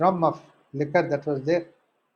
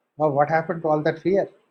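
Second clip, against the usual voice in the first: usual speaking voice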